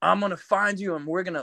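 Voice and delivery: put-on angry voice. Retelling how the promoter cursed at him on the phone: imitating someone cursing angrily. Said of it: "he's cursing me out".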